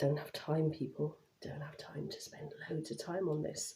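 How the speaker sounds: very quiet, breathy, near-whispered hushed talking. A working mum who is also studying talks to her audience, talking quietly. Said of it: "Don't know why I'm talking so quietly".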